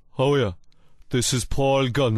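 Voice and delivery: heavy Kerry brogue, overdone and laid on thick. You are a Kerry footballer trying out a new mobile phone; Paul Galvin voice, too Kerry. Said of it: "that's too Kerry".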